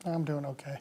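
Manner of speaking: troubled tone underneath the words. Answering how are you in a role-play, saying okay but sounding troubled. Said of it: "but the tone in his voice".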